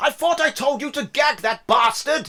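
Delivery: loud, high-pitched, furious barked snap. Voicing an official who snaps at a guard about a prisoner: snapping angrily. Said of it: "he snaps on".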